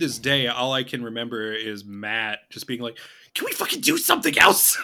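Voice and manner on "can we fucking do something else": very high, rough, rasping, fed-up raging outburst. Retelling a friend's angry complaint during a game: Matt impression. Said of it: "that's a Matt impression".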